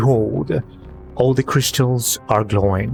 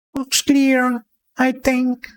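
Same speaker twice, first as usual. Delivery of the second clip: very high, pained goblin voice; 12 semitones higher than usual. Narrating a scene, the speaker voices a goblin looking around, pained goblin voice. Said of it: "why did it sound like I was in pain doing that voice".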